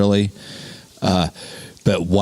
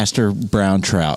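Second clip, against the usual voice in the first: ordinary talk, nothing marked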